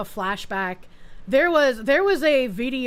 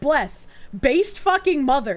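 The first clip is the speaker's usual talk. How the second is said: usual speaking voice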